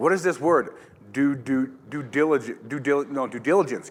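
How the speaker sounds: ordinary talk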